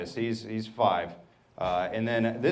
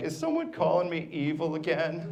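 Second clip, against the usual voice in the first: put-on play-acted high, drawn-out, tearful little kid crying; 6 semitones higher than usual. Retelling how a crying niece asked a question: imitating a crying child. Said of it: "already crying".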